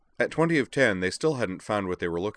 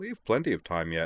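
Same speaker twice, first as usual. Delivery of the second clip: usual speaking voice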